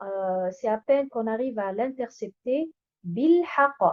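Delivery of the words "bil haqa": accent on first syllable Bil, the ba syllable. Arabic letter pronunciation lesson, accenting the vowel of ba: stress on first syllable 'ba'. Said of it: "en accentuant sur harakat al-ba'".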